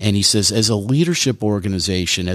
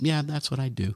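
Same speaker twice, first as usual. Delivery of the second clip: mock-casual, offhand nonchalance, much quieter; 5 semitones higher, 8 dB quieter than usual. Retelling a young engineer answering about his missile guidance work, imitating a nonchalant reply. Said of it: "He was so nonchalant about it".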